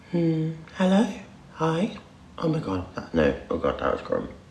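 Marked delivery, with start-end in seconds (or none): 0.2-2.0 very high-pitched, put-on girly voice. Trying out a voice on request, put-on girly voice. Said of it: "can I do a girly's voice?".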